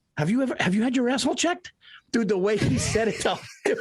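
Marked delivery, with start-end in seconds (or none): 0.2-1.8 mock straight-faced, earnest, dead-serious, sincere tone. Retelling a man's sudden question out of nowhere, retelling a dead-serious question. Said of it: "with all seriousness".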